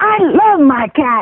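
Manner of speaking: very slow, drawn-out, put-on Texas drawl. Retelling what a radio caller from texas said: imitating a texas accent. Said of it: "this accent, he was from someplace in Texas".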